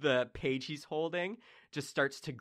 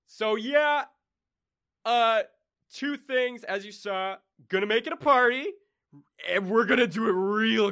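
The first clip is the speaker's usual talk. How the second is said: louder, booming god voice with echo; 8 semitones higher, 9 dB louder than usual. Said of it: "you just hear him go".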